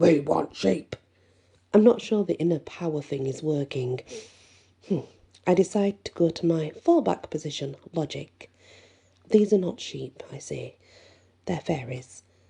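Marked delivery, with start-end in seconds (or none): 0.0-1.0 put-on puppet monster voice. A narrator voicing their inner wolf: Cookie Monster voice. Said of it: "keeps right on talking like the cookie monster".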